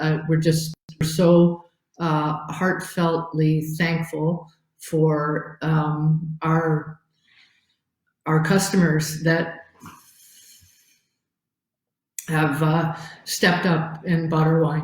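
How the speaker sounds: voice breaking, choking up with emotion. Thanking customers for buying online, choking up. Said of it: "I'm gonna choke up".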